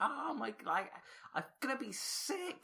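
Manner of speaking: put-on, very high, drawn-out screaming. Retelling a prank video where a man complains about feeling sick: imitating someone screaming.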